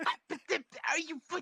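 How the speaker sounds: acted-out, put-on stutter. Retelling how someone reacted, imitating someone stuttering. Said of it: "starts like like stuttering".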